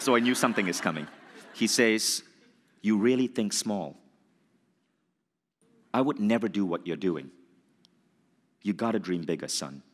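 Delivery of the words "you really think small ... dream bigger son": put-on intense voice. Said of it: "this really, really, like, intense voice".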